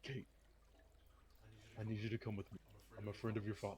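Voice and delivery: whispering in character voice. Whispering to a frightened girl in the game, asking her to come along. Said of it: "I'm gonna whisper".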